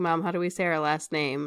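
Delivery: normal talking voice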